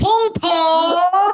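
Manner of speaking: put-on Australian voice. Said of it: "this is me quoting the Australian".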